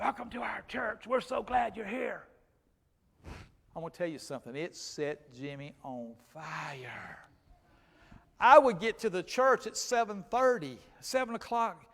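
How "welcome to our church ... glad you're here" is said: rough, creaky voice spoken through an electrolarynx. Picturing a church greeter welcoming a stranger: imitating a voice box voice. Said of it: "a man with a voice box going".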